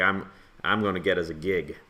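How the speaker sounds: plain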